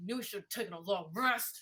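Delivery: muttering, mumbling under breath. Character edging closer to the others, muttering under breath. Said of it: "mutter under my breath".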